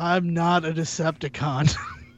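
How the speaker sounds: deadpan, flat, slow put-on monotone voice. Imitating how he would deliver a line, in a monotone voice. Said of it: "monotone voice of like".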